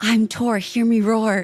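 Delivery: whispered voice. Retelling what is said to oneself before something scary: imitating own whisper. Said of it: "I whisper to myself".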